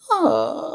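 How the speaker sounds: high cat-like sound with a yawn. Showing how the cat wakes up in Bagpuss: imitating the waking cat. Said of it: "the cat wakes up like this".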